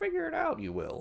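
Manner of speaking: very high, creaky little voice. Retelling how Yoda answers a question: Yoda voice. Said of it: "Yoda's like".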